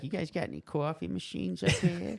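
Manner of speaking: put-on Boston accent. Retelling what a joyriding guy said; Boston accent. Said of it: "That's a Boston accent".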